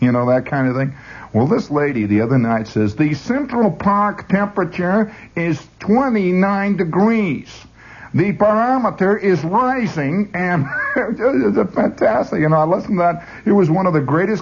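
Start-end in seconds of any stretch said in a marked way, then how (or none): 2.9-12.4 put-on pure Brooklyn accent, pitched up, radio-style voice. Speaker imitates a lady heard the other night, in a pure Brooklyn accent. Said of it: "a pure Brooklyn".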